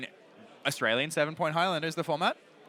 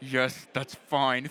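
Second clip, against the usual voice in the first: mock speech through gritted teeth, much slower; 3 semitones lower than usual. Imagining a reluctant reply to a token request, imitating Matt through gritted teeth. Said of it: "through the most gritted teeth you've ever seen".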